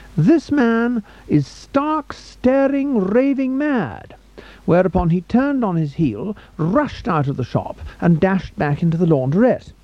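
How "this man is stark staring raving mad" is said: very loud, very slow, drawn-out, high booming shout. Retelling how a man at the shop door pointed at him; retelling a very loud shout. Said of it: "in a very loud shout".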